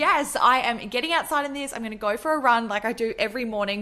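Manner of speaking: ordinary talk, nothing marked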